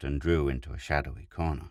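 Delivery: plain reading voice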